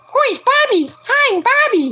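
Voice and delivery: character voice pushed very high. Recalling an old cartoon and doing its voice: Bobby voice. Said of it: "doing his voice".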